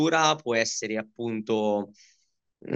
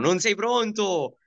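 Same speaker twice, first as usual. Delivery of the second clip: put-on coach-style yell, pitched very high; 10 semitones higher than usual. Recalling people behind him shouting after he took a silly hit, retelling a shout.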